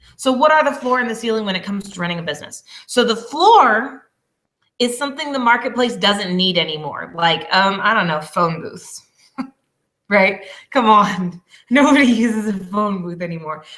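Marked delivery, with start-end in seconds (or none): 11.7-13.7 talking while chuckling and laughing. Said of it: "that I'm laughing over here".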